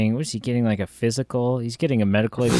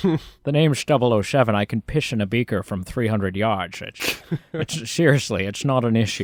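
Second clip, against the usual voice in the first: put-on Scottish accent, actor-like voice. Picturing a scene at a medical exam: Sean Connery voice. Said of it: "was Sean Connery saying".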